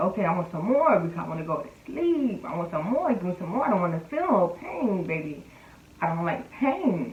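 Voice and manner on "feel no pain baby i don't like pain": ordinary talk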